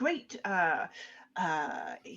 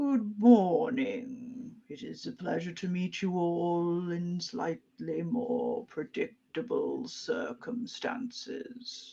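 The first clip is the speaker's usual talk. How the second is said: slow voice of a huge dragon. Greeting the players as a large dragon at the lakeside: voicing a large dragon. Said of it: "this large dragon form sort of looks at you all and says".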